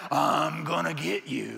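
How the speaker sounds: rough, deep, slow boogeyman monster growl. A parent recalls chasing their kids around the backyard, in a deep boogeyman voice. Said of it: "with my deep boogeyman voice".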